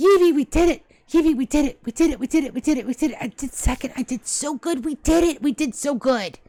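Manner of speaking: overjoyed, giddy, ecstatic, high bouncing cheer. Vivi's team takes second place in a cooking contest: ecstatic Vivi voice. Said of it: "He starts jumping up and down".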